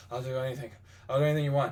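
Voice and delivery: put-on desperate, groveling, pleading, begging tone. Retelling a sketch where a kneeling man begs: imitating a desperate plea. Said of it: "keeps getting more and more desperate".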